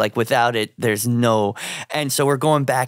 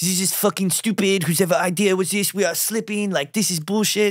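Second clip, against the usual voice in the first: put-on French accent, pitched up, complaining tone; 8 semitones higher than usual. Retelling complaints of french models backstage: imitating french models' accent. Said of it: "I don't know if you're allowed to do that accent anymore".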